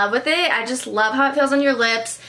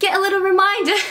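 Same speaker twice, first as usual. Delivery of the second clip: sudden slip into pitched-up put-on British accent; 8 semitones higher than usual. Video host reminding viewers to hit the bell button, in a British accent. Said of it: "Why did I just go British?".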